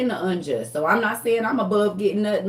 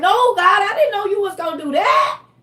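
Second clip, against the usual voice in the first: mock high, tearful, crying pleading voice; 10 semitones higher, 5 dB louder than usual. Imitating someone crying out to god in prayer: imitating someone crying. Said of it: "You will be crying like".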